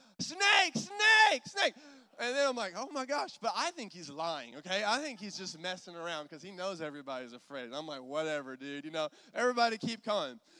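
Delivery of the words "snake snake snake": alarmed scream, shrill, very high and very loud. Telling how the oldest son reached the tunnel's other side: retelling a scream. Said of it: "he starts screaming".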